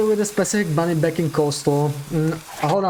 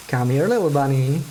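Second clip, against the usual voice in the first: ordinary talk, nothing marked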